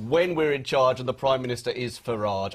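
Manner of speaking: ordinary talk, nothing marked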